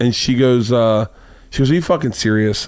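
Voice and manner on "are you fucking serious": ordinary talk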